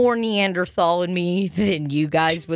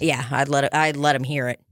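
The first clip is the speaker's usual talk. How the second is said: usual speaking voice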